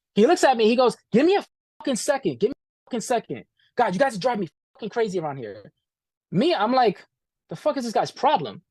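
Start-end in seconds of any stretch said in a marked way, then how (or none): 1.1-5.7 put-on angry man voice. Retelling how Max snapped at them before the interview: imitating Max, pissed off. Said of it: "I politely".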